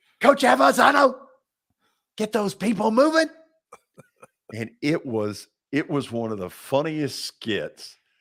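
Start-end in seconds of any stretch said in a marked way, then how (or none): 0.2-3.3 put-on coach voice, very high, loud, screamed. Retelling an on-air skit with a whistle: imitating Johnny Majors screaming. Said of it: "he starts screaming as Johnny Majors".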